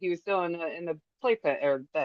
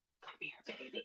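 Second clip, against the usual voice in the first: soft, breathy, barely voiced whisper. Retelling a voice heard in a dark apartment: imitating a whisper. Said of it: "it was like a whisper".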